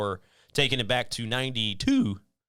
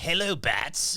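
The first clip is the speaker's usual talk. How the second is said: put-on cartoon villain voice, higher pitch; 6 semitones higher than usual. Chatting about Mark Hamill, doing a quick impression: Mark Hamill's Joker voice. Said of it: "he can make that voice".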